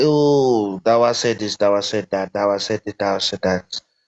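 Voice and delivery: ordinary talk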